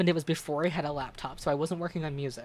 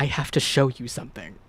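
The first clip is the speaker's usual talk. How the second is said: mock grave, low, utterly solemn, deadly serious delivery; 4 semitones lower, 4 dB louder than usual. Retelling how he said he had something to show you, in a put-on most solemn voice. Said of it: "in the most solemn voice he could manage".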